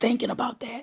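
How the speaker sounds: soft, unvoiced, tearful whisper.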